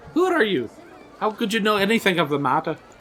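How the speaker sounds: put-on Scottish-accented speech. Reading a Sherlock Holmes story aloud, voicing the man Holmes addresses: Scottish accent. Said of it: "Why is every voice I do Scottish?".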